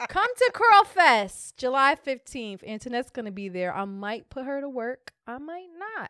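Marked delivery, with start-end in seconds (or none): 0.1-2.6 loud, high promo-style scream. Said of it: "fix her screaming in that goddamn mic".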